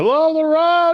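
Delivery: very high, very loud calling out. Voicing a figure who hails the party's camp: very loud high voice. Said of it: "You hear a very loud, uh, but high voice".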